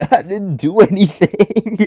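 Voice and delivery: high, slow, whiny tearful voice. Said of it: "You're like Josh from Merry Christmas".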